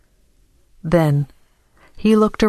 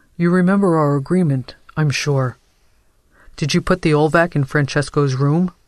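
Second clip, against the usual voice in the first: usual speaking voice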